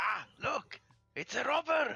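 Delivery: very high, shrill shouting out. Bork sees the player come in and yells: yelling. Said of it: "he yells".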